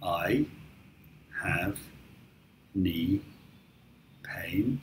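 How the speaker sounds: very slow, soft, deliberate, word-by-word delivery. Demonstrating the practice sentence for the listener, said slowly. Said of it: "say the sentence slowly".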